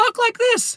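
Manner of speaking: very high, squeaky helium balloon voice. Speaker explaining a funny way to do voices, in a squeaky helium voice. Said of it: "when I say squeak".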